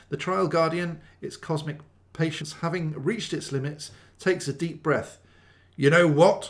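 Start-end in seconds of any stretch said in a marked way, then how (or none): 5.7-6.5 booming, grumbling voice. Narrator reads the Trial Guardian's words after its patience runs out, grumbling. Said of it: "it grumbles".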